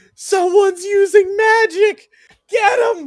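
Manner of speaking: high, very loud screaming in alarm. A game player's character sees someone using magic and sprints away, screaming. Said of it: "I start screaming".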